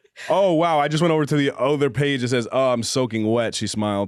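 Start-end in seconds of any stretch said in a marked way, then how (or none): none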